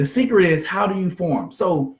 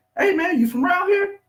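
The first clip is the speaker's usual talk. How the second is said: much higher voice rising in pitch. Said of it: "My, my, my voice going up".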